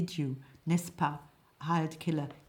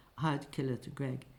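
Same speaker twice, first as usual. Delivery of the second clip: plain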